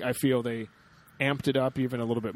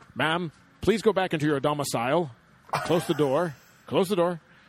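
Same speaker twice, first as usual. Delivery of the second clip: blustery fake put-on American accent; 4 semitones higher, 4 dB louder than usual. Retelling a scene where Jarvis pounds on a door, in Jarvis's broad American accent. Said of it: "Jarvis is doing that American accent".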